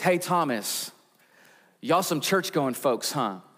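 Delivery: plain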